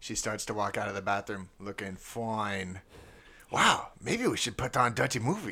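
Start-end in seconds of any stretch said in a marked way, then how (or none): 3.5-5.5 put-on Chinese accent, higher pitch. Playing Lee in an acted movie scene: put-on Chinese accent. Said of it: "one really quick Chinese accent".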